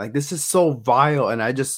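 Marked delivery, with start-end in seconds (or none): 0.1-1.3 sudden, blurted shouted outburst. Retelling what a friend shouted while watching: imitating a friend shouting. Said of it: "they just shouted out".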